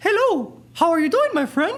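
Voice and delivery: very high-pitched, squeaky cartoon voice. Showing how to find head voice, doing a Mickey Mouse voice. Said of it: "trying to do Mickey Mouse voice".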